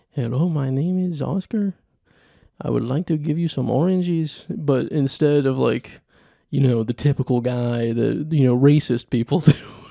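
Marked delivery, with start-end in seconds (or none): 0.2-4.5 soft-spoken put-on Mexican accent, higher pitch. Demoing a character who sells hot dogs at a baseball game, soft-spoken stereotypical Mexican accent. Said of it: "They're like the soft-spoken".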